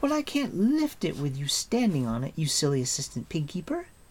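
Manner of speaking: muffled, complaining voice. A voice from under the straw speaks to Terran, a muffled complaint. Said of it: "the muffled voice complained".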